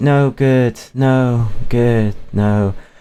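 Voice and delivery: acted, very slow, zapped-out, spacey daze. Retelling a cartoon scene where a character gets zapped: imitating a spacey, dazed voice. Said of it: "she starts getting spacey".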